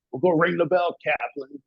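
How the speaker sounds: laid-back California surfer voice. Speaker retells his instructor answering him on the obstacle course: imitating Lyman's surfer talk. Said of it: "and he talks like one".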